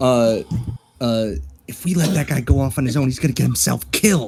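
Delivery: speaking in a hushed whisper. Whispering to a companion while the group decides what to do, whispering. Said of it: "I'm whispering to Athena".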